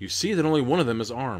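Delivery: ordinary delivery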